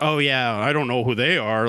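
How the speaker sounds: put-on sarcastic tone. Retelling another person's reply to one of their posts, mock-sarcastic.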